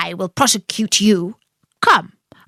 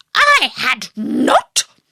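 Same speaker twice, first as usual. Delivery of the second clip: sharp, cutting, very angry voice with swooping pitch; 4 semitones higher than usual. Narrator reading the mouse's outburst at Alice: sharp and very angry. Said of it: "cried the mouse sharply and very angrily".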